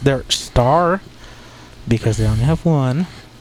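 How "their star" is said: "star" leaned on hard, heavy stress. Talking about the Dallas Cowboys' only star player, strong stress on star. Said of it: "I'll say that with very much emphasis".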